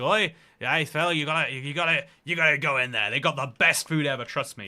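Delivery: Northern Irish accent impression. Retelling advice from a drunken man outside a chip shop: imitating a northern irish man. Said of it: "a Northern Irish man was like".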